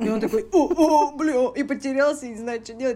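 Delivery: flustered blurt. Retelling how a guy reacted when she turned down his coffee; imitating a flustered guy. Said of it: "guy flustered by her flirt reply".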